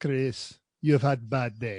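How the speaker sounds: very low, deep, badly faked German accent. Speaker imagines a car with a personality talking to its driver: bad German accent. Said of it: "I'm doing a bad German accent".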